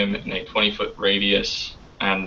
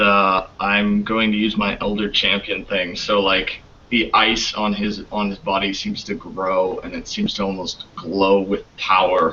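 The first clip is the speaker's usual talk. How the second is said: ordinary talk, nothing marked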